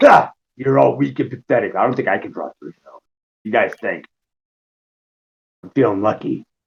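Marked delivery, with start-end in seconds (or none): 0.0-1.8 scornful, dismissive character voice, higher. Going back in character to taunt the party: in-character dismissive taunt. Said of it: "Back in character".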